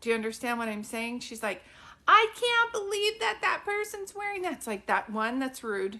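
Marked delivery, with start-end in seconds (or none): 2.1-4.5 put-on shrill, carrying, loud, very high grandma voice. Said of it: "And there's no whisper".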